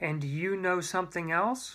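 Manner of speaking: ordinary delivery, nothing marked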